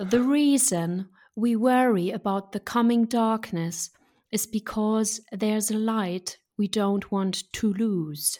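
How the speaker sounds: made-up English accent, very slow and loud. German speaker reading an English quote aloud, in a made-up English accent. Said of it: "Ich spreche das jetzt in so einem ausgedachten englischen Akzent".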